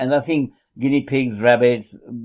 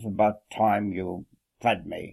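synthesized computer voice, much quieter; 4 semitones lower, 7 dB quieter than usual. Imagining a device that voices a cat's thoughts, the speaker gives the cat a Stephen Hawking type voice. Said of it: "Stephen Hawking type voice".

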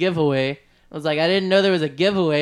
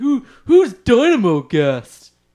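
peculiar swooping, drawn-out voice with rising tone; 6 semitones higher, 7 dB louder than usual. Retelling a phone call, imitating how a producer talked. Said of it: "that was a pretty good representation".

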